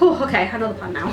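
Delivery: ordinary talk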